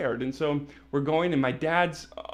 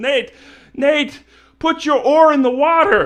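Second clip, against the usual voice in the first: very loud, booming, very high-pitched shout; 12 semitones higher, 13 dB louder than usual. Retelling your dad calling to you amid splashing chaos, imitating dad's booming voice. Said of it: "my dad's got this booming voice".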